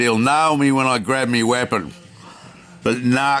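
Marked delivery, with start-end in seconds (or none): none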